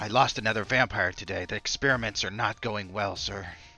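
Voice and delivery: hushed whisper. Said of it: "someone whispering".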